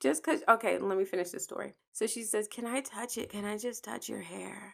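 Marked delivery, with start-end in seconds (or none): 2.5-4.7 put-on soft, loose, tipsy-sounding voice. Retelling a tipsy woman asking to touch the speaker's hair, imitating tipsy talk. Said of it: "I'm talking like this because we were tipsy".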